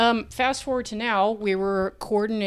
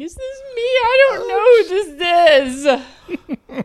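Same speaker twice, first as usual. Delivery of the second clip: mock crying, very high, very loud, drawn out; 12 semitones higher, 9 dB louder than usual. Retelling looking at a driver's license on edibles: imitating own past crying. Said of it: "crying and saying".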